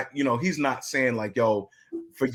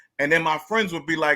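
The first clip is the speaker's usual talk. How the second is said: usual speaking voice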